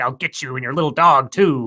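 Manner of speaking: storybook wicked witch villain voice. Retelling a story scene about a smashed snowman: Wicked Witch of the West voice. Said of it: "then she turns into the Wicked Witch of the West going like".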